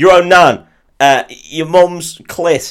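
very slow, high, loud, drawn-out hollered shout. Retelling an imagined comic movie scene: imitating someone shouting. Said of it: "Just shouting, like".

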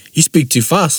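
ordinary delivery

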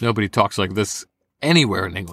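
ordinary talk

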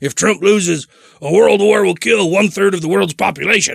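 throat-straining, forced voice. Introducing a clip of Alex Jones in an Alex Jones impression. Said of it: "That was a good impression of him".

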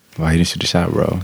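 voice dropped low. Player asks another player why he didn't shoot, deep voice. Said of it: "Why your voice got so deep?".

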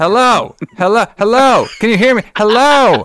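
high, screamed, acted-out yelling. Retelling how a movie character answers the phone: imitating Jess screaming into the phone. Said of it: "screaming at".

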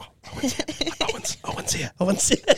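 imitated whispering girls. Retelling girls turning around as someone arrived: imitating girls whispering.

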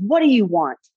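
mock furious, angry screamed shout. Retelling an angry stepfather flinging the door open: retelling a scream. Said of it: "he looked at me and he screamed".

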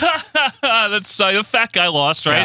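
mock, drawn-out, slow, high, taunting chuckle. Retelling a wrestling segment, imitating Lawrence Taylor laughing mockingly. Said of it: "So L T's like".

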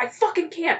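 put-on high, panicked, pleading outburst. Retelling how a character got stuck in a tunnel: imitating someone panicking. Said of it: "And he panicked".

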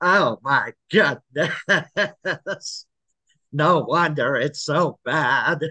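very slow, drawn-out voice with vibration. Showing own take on the comic's voice: Paul Lynde voice with vibration. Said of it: "that vibration in Paul Lynde's voice".

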